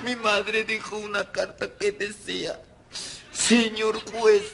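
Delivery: tearful weeping. In a drama scene, right after being asked why they're crying: crying. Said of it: "¿Por qué lloras?".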